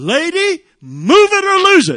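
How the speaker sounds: very loud, very high, shrill, drawn-out holler. Retelling a pastor yelling from a car window: retelling a loud holler. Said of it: "I hollered to the top of my lungs".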